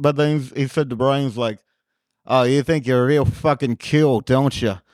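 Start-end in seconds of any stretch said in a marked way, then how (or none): 2.3-4.8 put-on dead serious aggressive tone. Retelling what an aggressive guy said to Brian: imitating dead serious aggression. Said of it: "dead serious".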